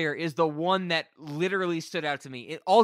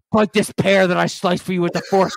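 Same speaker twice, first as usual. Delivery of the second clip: mock pining, lovesick voice, louder; 7 dB louder than usual. Retelling a movie scene, mocking a lovesick Jedi. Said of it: "he's like".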